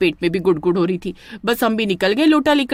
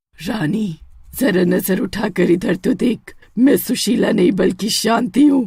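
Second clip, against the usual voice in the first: scary witch voice, slower. A narrator voices a witch revealing herself to a woman, scary witch voice. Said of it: "चुड़ैल की आवाज सुनकर".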